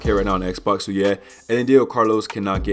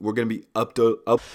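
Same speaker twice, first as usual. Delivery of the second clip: stuttering, tripping over words; 2 semitones higher than usual. Asking viewers to subscribe, stuttering. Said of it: "Stop fucking stuttering".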